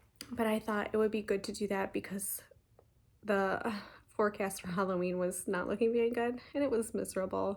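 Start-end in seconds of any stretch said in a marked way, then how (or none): 6.5-7.6 fast, rushed, hurried speech. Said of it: "Sorry if I'm talking too fast".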